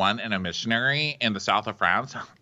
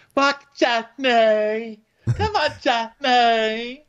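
put-on fun voice, higher and louder; 13 semitones higher, 5 dB louder than usual. Retelling how a woman called to Johnny: Lisa's fun voice. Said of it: "she's doing her fun voice".

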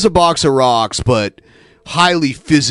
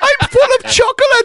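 very high-pitched cartoonish voice. Showing how people doing Hitler end up sounding: Uter from The Simpsons voice. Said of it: "he sounds like Uther from The Simpsons".

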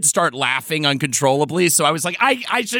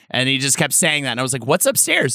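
ordinary talk

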